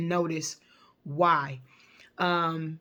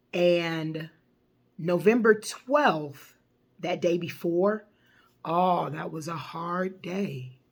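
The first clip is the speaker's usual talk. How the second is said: slow, emotional, the word and drawn out. Speaker recalls the day before their mom passed, audibly emotional voice. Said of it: "You can kind of hear it in my voice".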